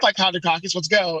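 ordinary delivery

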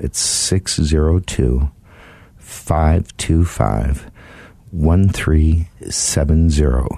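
very slow, spaced-out delivery. Speaker giving Gary's phone number to listeners, saying it really slow. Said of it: "I'm going to say it really slow".

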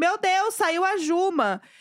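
big, stretched-out, excited yell. Storyteller re-enacting their own reaction while watching the show, retelling a shout. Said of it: "E aí eu dei um grito".

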